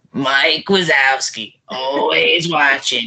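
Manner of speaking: put-on lady's character voice. Finally doing a promised impression, impression of the lady who says Mike Wazowski. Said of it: "impression of you know the lady that says Mike Wazowski".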